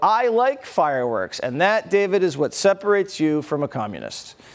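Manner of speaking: ordinary delivery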